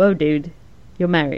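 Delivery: ordinary talk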